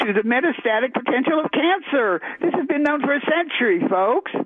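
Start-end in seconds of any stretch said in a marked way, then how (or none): 2.4-4.3 exasperated, frustrated, high-pitched yelling. Addressing the audience as folks, frustrated: yelling. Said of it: "Yes, I am yelling".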